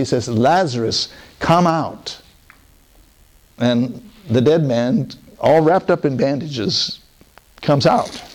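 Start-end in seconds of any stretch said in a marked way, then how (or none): 0.3-2.2 commanding, authoritative calling out, full authority. Retelling the raising of Lazarus, imitating Jesus commanding. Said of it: "in a commanding voice".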